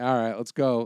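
ordinary talk, nothing marked

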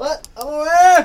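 screaming. Called on during a podcast, answering by screaming. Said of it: "What are you screaming for?".

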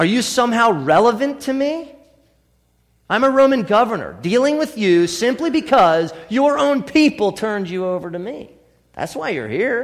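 lightly sarcastic character voice. Quoting Pilate's retort to Jesus: sarcastic Pilate voice. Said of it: "you gotta hear a little sarcasm".

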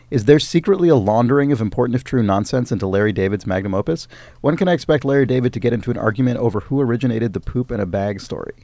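normal talking voice

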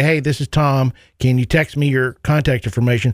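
ordinary talk

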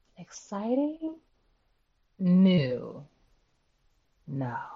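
slow, swooping, drawn-out, lingering on every word. Asked by the host whether anything exciting and new is happening: drawn out. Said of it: "That was real drawn out to give you a no".

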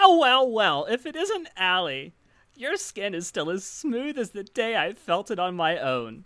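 put-on high, swooping old lady voice, drawn-out well. Character greeting Allie, attempted old woman voice. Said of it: "I can't do an old woman voice".

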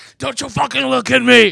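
very loud, rough, raw, shrill, high yell. Acting out an imagined movie scene: Frank Booth voice. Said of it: "Frank Booth as, like".

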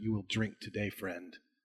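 soft, close half-whisper under the breath. A player's character brings the weapon down and half-whispers to it: half-whispering. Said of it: "and I whisper to it".

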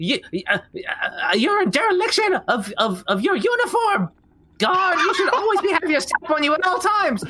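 put-on shocked tone. A tabletop player, in character, scolding another character, acting shocked. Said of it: "I am going to act shock".

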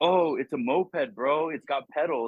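stoked drawn-out bro voice. Retelling a friend's reply about his new moped: imitating Benji, stoked. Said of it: "that's just how he sounds".

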